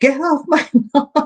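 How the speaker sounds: high acted yell. Recounting what was yelled at a deer chewing the lilies, retelling a yell. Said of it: "and I just yelled".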